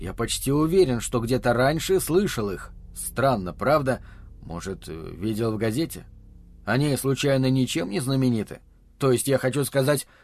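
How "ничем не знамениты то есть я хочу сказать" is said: plain reading voice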